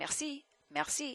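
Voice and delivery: merci rattled off very fast and soft. Showing students how the french r vanishes at speed: said very fast. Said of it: "but if I say it very fast".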